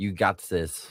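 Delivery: put-on German-accented reading. Retelling how they first read the line: German accent. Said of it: "I read it in, like, a German voice".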